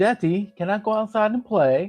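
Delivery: imitated British accent. Retelling what the son asks, imitating son's British accent. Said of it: "he developed a British accent".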